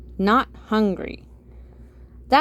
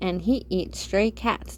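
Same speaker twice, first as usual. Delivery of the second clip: ordinary delivery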